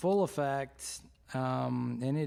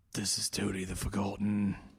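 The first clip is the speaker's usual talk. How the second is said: put-on British accent in a deep voice; 5 semitones lower than usual. Introducing another player's character during a game, in a deep british accent. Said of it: "this deep and British accent for me".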